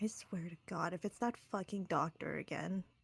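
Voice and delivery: muttering under her breath. Player voicing Penumbra in the sewers, muttering under her breath. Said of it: "Penumbra is just muttering under her under her breath".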